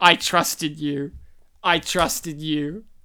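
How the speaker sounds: mock, thoroughly let-down, deeply disappointed tone. Recalling throwing a DVD at a friend at school, acting out disappointment. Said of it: "was I trusted you in a disappointed tone".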